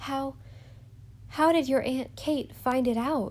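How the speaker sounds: gasped out. Narrator reading a character's question, gasping. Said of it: "she gasped through dry lips".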